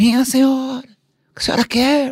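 mock, loud, very high-pitched yell. Retelling how the doctor shouted louder than the screaming patient, imitating a doctor shouting. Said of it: "o médico gritou mais alto que ela".

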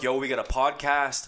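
ordinary delivery

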